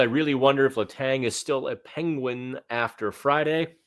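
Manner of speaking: ordinary talk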